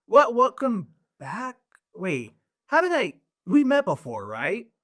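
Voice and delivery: puzzled, high, swooping voice with wandering pitch. Voicing Roger, who is unsure he has met the newcomer: voicing Roger, puzzled. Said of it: "Roger looks at you".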